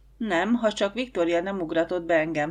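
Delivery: ordinary delivery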